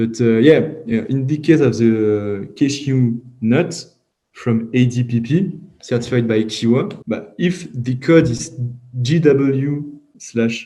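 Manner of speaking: English spoken with a strong French accent.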